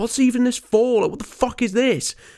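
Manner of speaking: play-acted very high-pitched, angry, loud yell. Retelling what an injured man shouted after a fight: imitating someone shouting. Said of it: "starts shouting".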